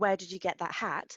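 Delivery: ordinary delivery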